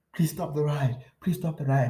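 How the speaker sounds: begging, pleading cry. Retelling begging a ride to stop: imitating own yelling. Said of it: "but I'm yelling, so everyone hears me".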